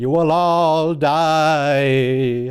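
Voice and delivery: very slow, eerie, haunting ghost voice. Imitating a ghost talking through someone on screen: spooky ghost voice. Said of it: "There's a spooky ghost talking through him".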